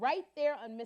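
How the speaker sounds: plain reading voice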